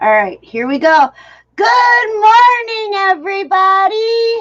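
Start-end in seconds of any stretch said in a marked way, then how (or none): 1.6-4.4 loud shout, pitched very high. Greeting the viewers after warning them to remove earbuds: loud shouted greeting. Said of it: "Damn, loud".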